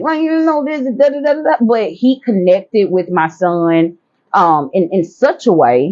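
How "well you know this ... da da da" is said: acted, high-pitched, all-worked-up exasperated yell. Retelling own past words to a son being tutored: imitating own yelling. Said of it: "I'm yelling".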